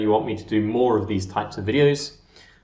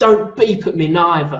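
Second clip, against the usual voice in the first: loud, pitched-up shout; 6 semitones higher, 7 dB louder than usual. Retelling what a lady on a bicycle said through the car window: imitating someone shouting. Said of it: "shouts through the window at my grandma".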